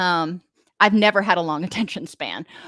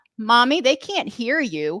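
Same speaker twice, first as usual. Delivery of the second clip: put-on tiny, small little-child voice; 4 semitones higher than usual. A parent retelling her young son speaking from his car seat, imitating a little child's voice. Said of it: "this little voice from the back".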